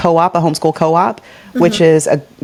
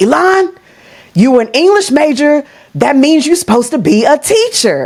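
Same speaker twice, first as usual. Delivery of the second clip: put-on Alabama Southern country accent, pitched up; 9 semitones higher than usual. Recalling their father's advice, the speaker quotes him in a put-on country accent. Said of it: "I'm going to give my country accent".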